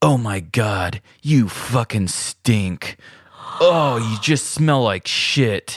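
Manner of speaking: mean, nasty, blunt tone, slow. Retelling a man in a restroom talking toward a stall, imitating a mean, direct insult. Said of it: "this guy was being so mean and like direct".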